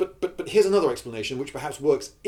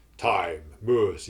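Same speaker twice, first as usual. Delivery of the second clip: put-on villain voice, pitched lower; 7 semitones lower than usual. Teaching how to voice a line, demonstrating drawn-out vowels, Darth Vader voice. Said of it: "you've got to draw out those vowels a bit".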